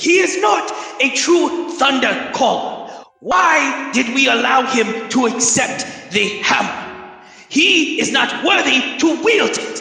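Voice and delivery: high, fearful, scared yell. Recounting what the bear totem yells, doing its voice: retelling a bear totem's yell. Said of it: "just yelling in fears like".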